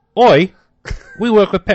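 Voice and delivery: shrill, high, loud, put-on Australian accent. Reading out a quote after being asked for an australian accent: put-on australian accent. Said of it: "Do it in an Australian accent".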